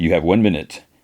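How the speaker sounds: ordinary talk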